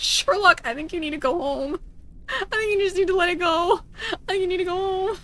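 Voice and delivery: high, loud, sobbing, crying pleading tone.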